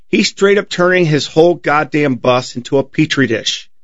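plain

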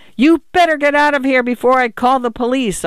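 agitated, shrill, high yell. A man yells after a man in an overcoat walking away, shrill yell. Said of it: "His voice was shrill".

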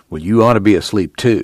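usual speaking voice

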